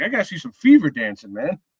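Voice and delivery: animated, swooping, sing-song buddy delivery. Retelling what a friend with season tickets says: imitating Mike. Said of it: "That's what he does to me. He's like".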